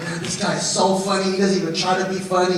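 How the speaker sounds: ordinary talk, nothing marked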